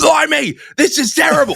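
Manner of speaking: very high, drawn-out, panicky British voice. Retelling a TV scene where a captain panics: imitating a British character panicking. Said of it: "he's in the back room going like".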